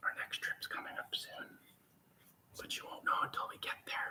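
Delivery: soft, breathy whisper. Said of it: "That's why I'm whispering".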